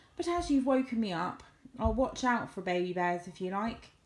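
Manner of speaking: ordinary delivery, nothing marked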